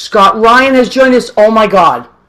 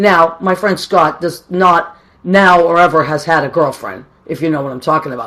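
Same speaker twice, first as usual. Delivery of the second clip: plain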